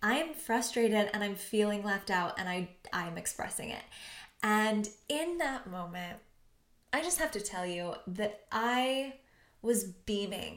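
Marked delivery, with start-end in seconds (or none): none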